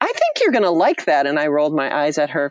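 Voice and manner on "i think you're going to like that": bright, perky, pitched-up tone. Retelling what their mother said on the drive home, mimicking mother's perky voice. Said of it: "in her perky voice saying".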